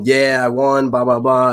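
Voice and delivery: loud, jubilant celebratory screaming. Retelling thinking they won the league: retelling own past screaming. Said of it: "I'm screaming".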